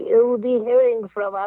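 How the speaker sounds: slow, drawn-out storybook wicked-witch voice. Speaker retells prank phone calls with friends, doing a Wicked Witch voice. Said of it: "like the Wicked Witch of the Wizard of Oz".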